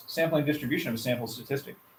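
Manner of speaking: fast, rushed rattle-off. A teacher shows how they like to say a statistics term, real fast. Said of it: "I love to say it real fast".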